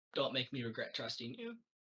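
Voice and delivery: very quiet, soft, hushed half-whisper. Playing a character warning another close to their ear: quiet half-whisper in character. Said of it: "I will whisper in your ear very quietly".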